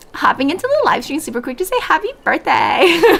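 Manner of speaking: put-on bubbly, swooping, high Valley Girl drawl. On a live stream, reading a birthday message for a redeem: Valley Girl accent. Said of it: "I'm in Valley Girl Redeem right now, so I'm about to read it".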